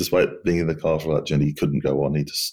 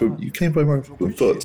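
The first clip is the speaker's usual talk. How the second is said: acted-out shout, much higher; 10 semitones higher than usual. Retelling how a woman shouted at a man who came from Mariupol, imitating someone shouting. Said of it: "And she shouts, she screams, she shouts".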